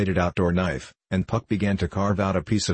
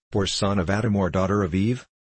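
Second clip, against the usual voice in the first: ordinary delivery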